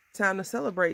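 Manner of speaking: plain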